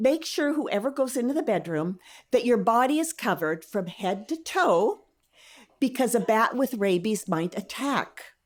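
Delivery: ordinary talk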